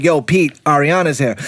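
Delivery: ordinary talk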